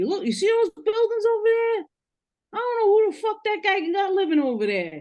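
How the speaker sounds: very high-pitched voice. Retelling what the father used to say while pointing: imitating his father. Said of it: "used to say".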